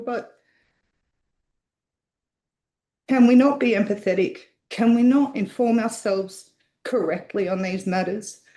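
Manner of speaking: emotional, upset voice. Speaking in a council meeting against misinformation, emotional. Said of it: "I apologise for being so emotional".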